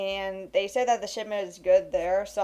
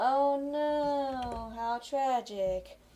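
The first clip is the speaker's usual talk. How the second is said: sarcastic mock sorrow, pitched up, "no" stretched out; 5 semitones higher, 5 dB quieter than usual. Demonstrating how the speaker sounds when being sarcastic, in a sarcastic tone. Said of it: "I do sarcastic of like".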